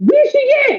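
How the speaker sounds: very high, glass-breaking, shrill yell. Retelling a knock at the door, the speaker imitates their mother's shrill voice. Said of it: "I know that shrill anywhere".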